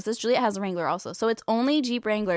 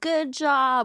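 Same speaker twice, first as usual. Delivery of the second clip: mock sarcastic yelling, higher pitch; 4 semitones higher than usual. Retelling how a friend yells from her car window: imitating a friend yelling sarcastically. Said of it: "yelling out her window".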